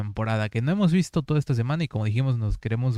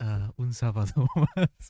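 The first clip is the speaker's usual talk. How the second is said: drawn-out, very slow storybook narration. Showing how the SpongeBob narrator would say the line: SpongeBob narrator voice. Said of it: "haces la voz del narrador de Bob Esponja".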